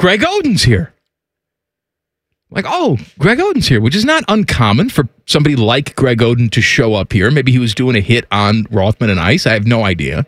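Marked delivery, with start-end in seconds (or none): 0.0-0.9 acted-out proud, self-assured, pleased, confident delivery. Retelling a companion's announcement during a ping pong game, mock-proud, confident announcement. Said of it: "Timmy says proudly and confidently".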